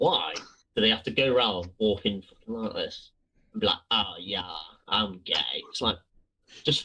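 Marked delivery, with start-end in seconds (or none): 3.9-5.6 very slow, low, drawn-out put-on Essex accent. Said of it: "That just sounded like Essex".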